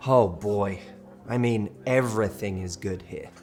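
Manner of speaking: low, pained, hopeless voice. Speaker acts out a person's reply, acting pained and hopeless. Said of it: "with a pained look, as if this is going to be really hard".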